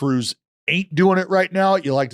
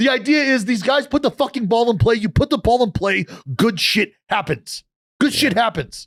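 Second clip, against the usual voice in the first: angry, higher; 6 semitones higher than usual. Ranting about hitters who put the ball in play: mad. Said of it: "You sound mad".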